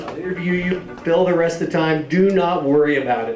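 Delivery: ordinary talk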